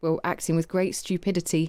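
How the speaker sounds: ordinary delivery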